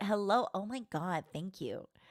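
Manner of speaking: put-on high voice riding up, Valley Girl style. Describing how her voice goes up when simping, high valley girl voice. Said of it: "Like I kind of do my Valley Girl voice, right?".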